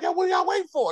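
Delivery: very high, loud screaming. Retelling watching a show, imitating screaming at the tv. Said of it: "That's what I'm screaming at the T V".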